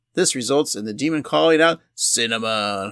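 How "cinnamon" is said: club DJ announcer voice, quieter. Retelling a scene, saying the name cinnamon: stripper dj voice. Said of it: "the reason I keep saying that, cinnamon, that way".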